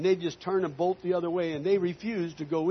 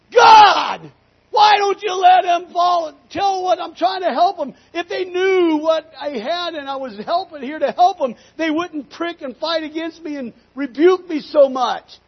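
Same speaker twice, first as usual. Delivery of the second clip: very loud, shrill, angry screaming at top of lungs; 11 semitones higher, 11 dB louder than usual. Retelling crying out to god while struggling with the cows; re-enacting screaming at full lungs. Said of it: "screamed at the top of my lungs".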